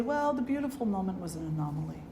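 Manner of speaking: ordinary talk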